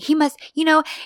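put-on high-pitched, patronizing, coddling voice as to a child. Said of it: "she almost treats him like a little kid".

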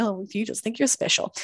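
ordinary talk

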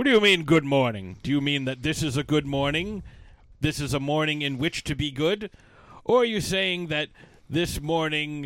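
put-on confrontational wizard voice. Retelling Gandalf's reply to a friendly good morning: imitating Gandalf being confrontational. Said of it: "Gandalf's kinda, like, confrontational the first time".

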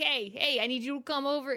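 rough, gruff put-on New Jersey accent. Describing a magical game character in the overworld, in a gruff jersey accent. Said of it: "he has this like real gruff, like Jersey accent".

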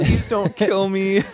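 acted high, slow, tearful begging voice. Retelling a movie scene where a character begs her mugger: imitating crying. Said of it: "and she's crying".

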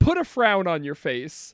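normal talking voice

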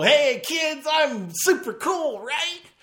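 high, slow, happy-go-lucky fake try-hard cool. Retelling a movie, imitating the vice principal: happy-go-lucky try-hard cool vice principal. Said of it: "happy-go-lucky and".

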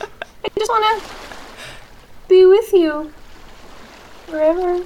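very high, slow, drawn-out little spirit voice. Narrator in a role-playing game voices a spirit replying to a player: little spirit voice. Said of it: "you hear a little spirit voice from behind you go".

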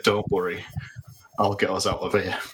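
tender, gentle whisper. A character whispers reassurance into a crying stranger's ear, tender whisper. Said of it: "Jared tenderly whispers in the person's ear".

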